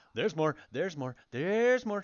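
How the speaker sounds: high, loud yell. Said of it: "And I'm gonna say".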